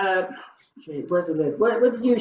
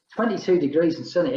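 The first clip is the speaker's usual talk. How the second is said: ordinary talk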